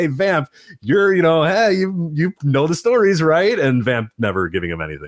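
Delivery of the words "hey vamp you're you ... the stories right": desperate pleading voice, pitched very high. Retelling how one commentator kept asking the other about the stories: desperate Striker impression. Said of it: "Striker desperately saying".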